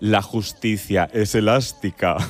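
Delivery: low, wicked villainess voice. Speaker quotes a line from a character in the series Herederos, mock-wicked Concha Velasco villain voice. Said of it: "decía así con voz de muy mala, malísima".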